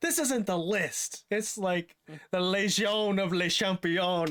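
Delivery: slow, drawn-out, announcer-style hype call. Retelling a clip where a wrestler yells at the crowd: imitating someone yelling at the crowd. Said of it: "yelling at the crowd".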